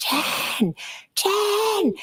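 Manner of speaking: put-on very high call, one word drawn long. Describing opening the front door to a woman outside, retelling her screaming a name. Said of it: "she's screaming".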